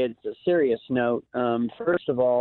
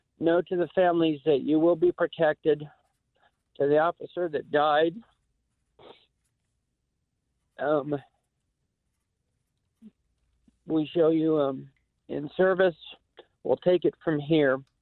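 speaking through held-back tears, fighting off crying; 3 semitones higher than usual. Addressing the families after an officer died, trying not to cry. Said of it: "I'm trying not to cry".

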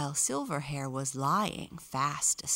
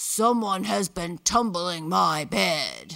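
loud, growling big bear voice; 3 semitones higher, 8 dB louder than usual. Reading a bedtime story, the narrator voices the big bear in the bedroom: growling big bear voice. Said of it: "the big bear growled".

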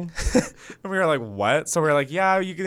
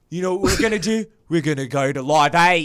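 put-on accent slipping into Australian; 3 dB louder than usual. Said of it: "You slipped in Australia".

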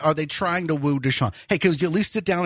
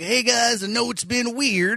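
laid-back, pitched-up, try-hard cool voice; 5 semitones higher than usual. Imitating a coach addressing players about a canceled camp: David Culley impression, John McClane-like. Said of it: "talks like John McClane".

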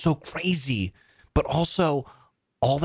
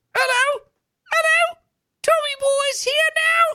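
very high, put-on little boy spirit voice; 3 dB louder than usual. Retelling a séance where she channels a little boy spirit, Tommy Boy little boy spirit voice. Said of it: "she's like doing the voice".

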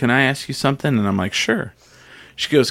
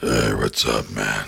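very low, slow, dragged-out slow-motion voice; 3 dB quieter than usual. Recalling a voice kids did, the speaker demonstrates it in a slow-motion voice. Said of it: "that voice".

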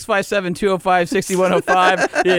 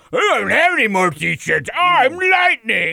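slow, silly Rrr-sound voice; 4 semitones higher than usual. Retelling what the other speaker said about t-shirts: imitating co-host in funny "Rrr" voice. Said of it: "impersonate me all you want and do that funny "Rrr" voice".

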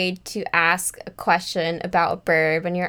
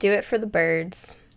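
ordinary talk, nothing marked

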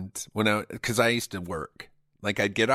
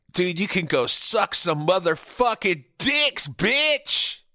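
mock drunk voice, higher and louder; 9 semitones higher, 4 dB louder than usual. Acting out a phone call from his past self after drinking: imitating his drunk self. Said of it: "you've already cracked into that country club malt liquor".

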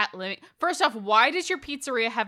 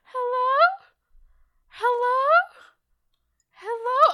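put-on creepy, eerie child-like voice, much higher pitch; 5 dB louder than usual. Retelling waking at 3 a.m. to the cat calling out, in a creepy child voice. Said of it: "creepy child, ... child voice going".

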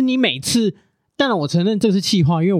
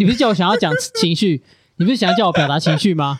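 usual speaking voice

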